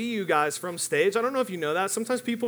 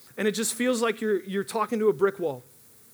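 normal talking voice

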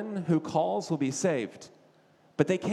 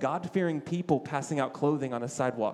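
ordinary talk, nothing marked

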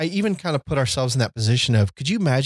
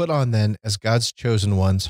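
ordinary delivery

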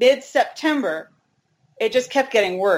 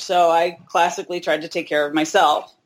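plain

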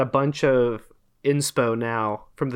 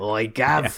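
put-on British lad voice and accent; 4 semitones lower than usual. Joking about names that sound like british lads, imitating a british lad. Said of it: "like a British lad".

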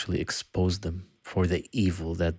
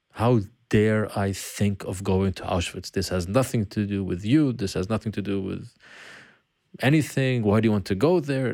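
usual speaking voice

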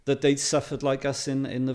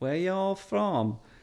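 put-on deep, pitched-up Southern American accent; 6 semitones higher than usual. Retelling how locals greeted them, imitating a deep southern accent. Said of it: "they had this deep Southern accent".

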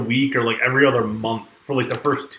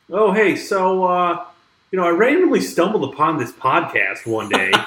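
casual, offhand nonchalant tone, pitched up; 6 semitones higher than usual. Retelling meeting someone from high school, imitating her nonchalant tone. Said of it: "real nonchalantly".

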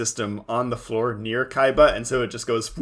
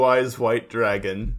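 ordinary talk, nothing marked

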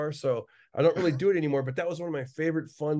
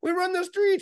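put-on, high, tough street gang member voice; 4 dB louder than usual. Retelling a bit playing both a documentary guy and a gang, gang member voice. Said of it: "so I would do the voices back and forth".

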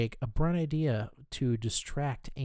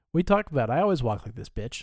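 put-on loud, offhand, nonchalant, casual tone; 6 dB louder than usual. Retelling what Boyle said when walking into the building: imitating Boyle's casual tone. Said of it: "It was so casual".

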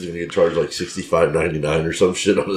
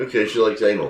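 ordinary talk

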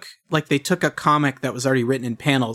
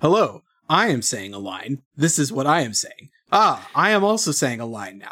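mock presentational voice-acting delivery. Mocking a game's voice acting, mock presentational line delivery. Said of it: "it is so presentational the whole time".

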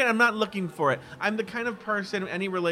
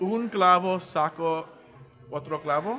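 slow, deliberate Spanish, each word carefully placed. Attempting a Spanish saying for the other speaker, speaking Spanish slowly. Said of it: "I'm going to say it slowly".

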